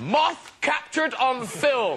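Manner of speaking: mock-dramatic delivery.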